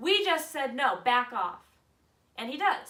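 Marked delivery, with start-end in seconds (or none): 0.0-1.6 very loud, full-volume shouting yell. Retelling how she turned and answered the harasser: retelling her own yell. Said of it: "I turn around and I yell back at him".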